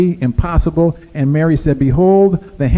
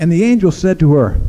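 normal talking voice

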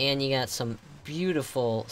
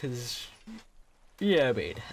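speaking while yawning. Filming a walk past the shops at a ski station, speaking through a yawn. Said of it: "sorry for that yawn".

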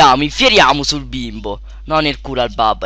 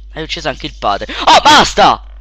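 ordinary talk

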